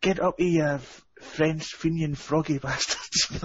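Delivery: high-pitched, hollered, jeering shout. Retelling how a friend stood up at a Rangers game: imitating someone shouting. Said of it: "stood up and shouted".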